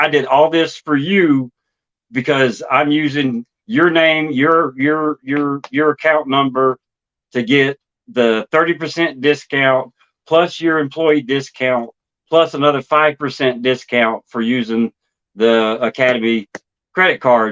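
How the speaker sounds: ordinary talk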